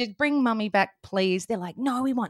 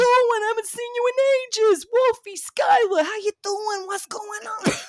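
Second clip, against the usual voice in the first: put-on Italian New York voice, higher and louder; 12 semitones higher, 4 dB louder than usual. Playing a character for the kids in a Tony Pepperoni voice. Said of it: "and he's like".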